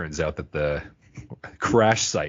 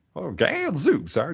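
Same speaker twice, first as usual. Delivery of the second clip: put-on very high, flamboyant, old-timey voice; 11 semitones higher than usual. Describing Fry's grandfather Enos to a co-host: old-timey Enos voice. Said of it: "he's kind of one of these old-timey".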